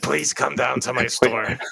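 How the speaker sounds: raspy, rough cartoon clown voice, begging, desperate. Recalling a store owner from childhood commercials, in a Krusty the Clown voice. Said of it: "You do a pretty good Krusty".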